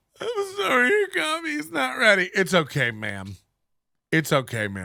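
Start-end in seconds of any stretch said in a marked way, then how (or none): 0.2-2.3 very high, wild blubbering sobs through the words. Mocking a coworker's story about a rude customer: mock sobbing voice. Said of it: "sobbing wildly at the time and using that tone of voice".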